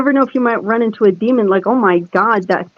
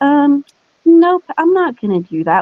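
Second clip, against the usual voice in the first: put-on very sweet, sugary, high voice; 7 semitones higher than usual. Describing how she refuses, imitating her really sweet voice. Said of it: "Like with this like really sweet voice".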